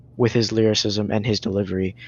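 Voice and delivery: ordinary talk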